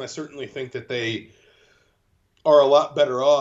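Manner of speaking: words caught in a yawn. A radio guest answers a question about TV companies, yawning while talking. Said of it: "I was yawning there".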